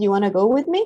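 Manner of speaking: rising question tune, climbing high on "me". Teaching question intonation with an example: rising at the end on me. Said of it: "a question uh, usually uh, goes up. It has a high intonation".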